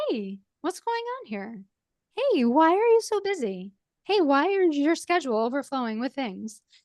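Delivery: kind, caring, loving voice with sing-song lilt. Showing the voice to use when talking to yourself; loving voice. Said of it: "that loving voice that says".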